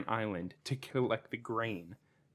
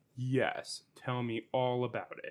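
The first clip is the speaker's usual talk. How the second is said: put-on dry, sarcastic delivery, slower pace. Praising an actor's sarcasm in House of Cards; imitating sarcastic delivery. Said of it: "He's so sarcastic".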